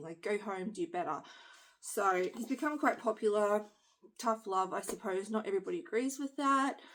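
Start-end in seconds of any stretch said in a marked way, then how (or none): none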